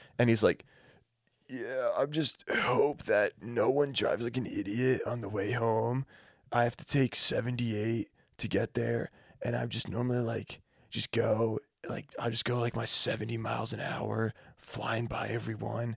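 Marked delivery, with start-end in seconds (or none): 1.5-16.0 put-on raspy voice, quieter. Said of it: "fake raspy".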